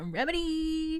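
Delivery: very high-pitched, drawn-out, lingering remedy. Podcast host describing a habit with one word: 'remedy' pitched high and lingering. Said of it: "goes high pitch and kind of lingers".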